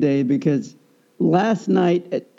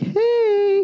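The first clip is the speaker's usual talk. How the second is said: lightened, very high, drawn-out "hey". Retelling greeting a cute little dog: retelling own lightened voice. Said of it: "I lighten my voice".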